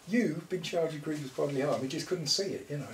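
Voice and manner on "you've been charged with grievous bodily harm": puzzled, quizzical, doubting tone. Retelling a workmate's reaction to hearing about the charge, imitating a quizzical voice. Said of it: "in that sort of quizzical voice".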